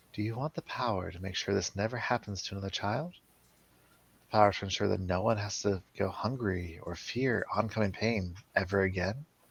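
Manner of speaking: soft, hushed half-whisper, barely breathed. Narrating a dream to the listener, a voice is heard in a soft half-whisper. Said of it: "you hear a voice just whispering softly".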